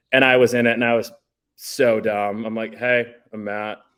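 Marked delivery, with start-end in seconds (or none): 2.7-3.7 super flat, deadpan, uninflected monotone. Acting out his past self introducing himself on MTV, super monotone. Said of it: "like super monotone".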